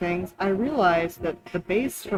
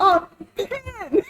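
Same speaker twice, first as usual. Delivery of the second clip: put-on yell, much higher pitch; 12 semitones higher than usual. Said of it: "I just like yelled".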